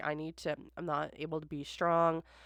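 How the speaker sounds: ordinary delivery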